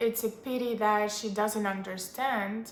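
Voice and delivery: ordinary talk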